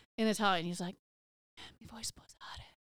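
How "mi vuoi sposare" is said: hushed, soft, barely-there whisper. Retelling a marriage proposal in Italian at dinner: imitating a softly spoken proposal. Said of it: "He said it really soft".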